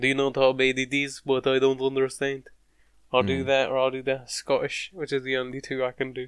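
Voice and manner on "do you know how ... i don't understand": put-on Eastern European accent. Speaker demonstrates one of the only two accents he can do; put-on East European accent. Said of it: "I'll do like an East European".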